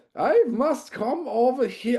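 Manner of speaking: put-on over-the-top comedy-film German accent, very high and loud. Retelling a man who came over, the speaker quotes him in a ridiculous Carry On-style German accent. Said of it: "in the most ridiculous carry-on film style German accent".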